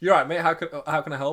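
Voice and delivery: put-on learner's broken English accent. Recalling a man who knew little English, the speaker imitates him in a broken accent. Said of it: "obviously in a broken accent".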